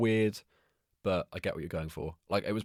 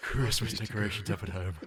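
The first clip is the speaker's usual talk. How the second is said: wispy put-on voice throughout; 2 semitones higher than usual. Pretending to post a daily Instagram update: Richard E. Grant impression. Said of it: "Daily updates with his wispy voice".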